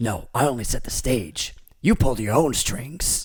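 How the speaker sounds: devil character voice. Quoting a movie line for a guessing game: Al Pacino impression. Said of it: "that's your Pacino impression".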